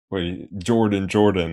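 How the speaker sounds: plain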